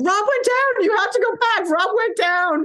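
acted crazed shriek, very high and frantic. Speaker retells shouting to a fallen racer's crew at Ultraman, retelling own screaming. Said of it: "I'm screaming like a crazy person".

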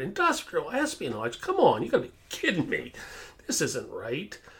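put-on voice through helpless laughter, swooping. Retelling own reply to a manager's espionage claim: imitating own words while laughing. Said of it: "I'm laughing so hard".

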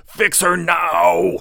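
frantic, very high, ragged yell, stretched out. Holding the girl, the troll yells at Cameron, a frantic yell. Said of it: "he yelled at Cameron".

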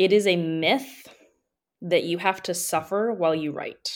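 very slow, deliberate, word by word. Making a point to listeners, saying it very slowly. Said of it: "I'm going to say this very slowly".

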